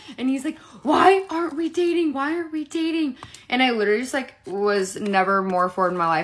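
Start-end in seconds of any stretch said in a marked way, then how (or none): 0.8-3.2 frantic, demanding, high-pitched angry yelling. Cruising down the road, the speaker recounts him yelling again: retelling a yell. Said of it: "he starts yelling at me again".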